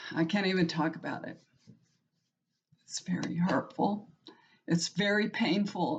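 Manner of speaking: near tears, tearful, voice choking up. Talking about her grandsons coming to live with her, on the verge of tears. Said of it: "I'm gonna cry".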